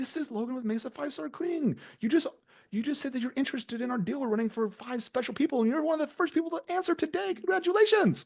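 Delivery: very high, crazy-sounding voice. Acting out a cleaning-company caller pitching a deal on the phone: sounding crazy. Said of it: "you sound crazy".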